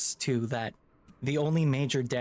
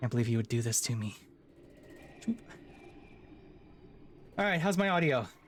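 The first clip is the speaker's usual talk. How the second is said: breathless, winded speech; 2 semitones lower, 4 dB quieter than usual. Resuming the game after Chad's bullying, checking your audio, out of breath. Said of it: "I'm completely out of breath".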